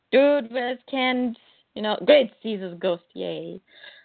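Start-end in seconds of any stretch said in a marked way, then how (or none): 0.1-1.3 angry, ranting shout, kept mild. Recapping a Superman story, retelling someone yelling. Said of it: "Perry is yelling and shouting like".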